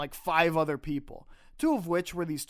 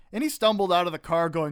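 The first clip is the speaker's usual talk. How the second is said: ordinary talk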